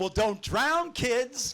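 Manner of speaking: voice way up high, slow. Retelling how mom told the kids not to drown, in a June Cleaver voice. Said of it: "My mom would go in this June Cleaver voice".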